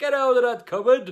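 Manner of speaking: put-on shrill, very loud, high yell in thick Welsh accent. Doing your impression of a man telling people off, imitating a shout, thick Welsh accent. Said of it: "really thick Welsh accent".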